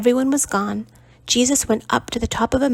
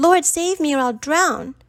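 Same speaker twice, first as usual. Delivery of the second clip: high-pitched panicked cry; 5 semitones higher than usual. Reading a story aloud, a figure sinking in the water: panicked cry. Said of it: "Panicking, he cried out".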